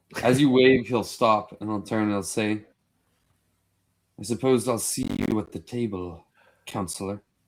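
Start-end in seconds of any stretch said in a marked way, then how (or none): 4.2-7.3 sneering on every word. Voicing a council member passing a seated player: sneering. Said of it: "who sneers at you".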